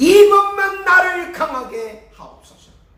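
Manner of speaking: high, loud, desperate crying out.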